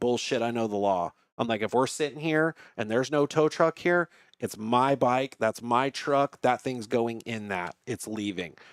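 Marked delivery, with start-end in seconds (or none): none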